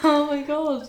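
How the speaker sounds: high, loud laughing, words broken up by laughter. Reacting after mentioning a director's death, laughing while talking. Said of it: "why are you laughing?".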